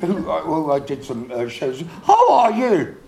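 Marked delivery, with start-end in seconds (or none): 2.0-2.9 mock Welsh accent, higher and louder. Playing a bad interviewer asking a guest a question: put-on welsh accent. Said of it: "Mine was Welsh".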